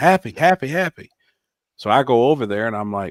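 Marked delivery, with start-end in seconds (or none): 0.0-1.1 high, urgent, shouted yell. Speaker retelling how Jamie yelled for him: imitating Jamie yelling. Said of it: "Jamie's yelling".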